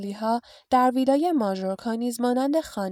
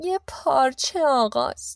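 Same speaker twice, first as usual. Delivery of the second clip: nasal voice, higher pitch, slower pace; 3 semitones higher than usual. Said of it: "خاله پتونیا با صدای تو دماغی گفت".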